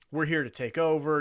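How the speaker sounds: normal talking voice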